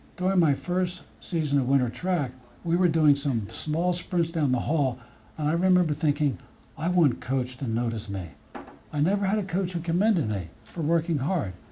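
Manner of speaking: plain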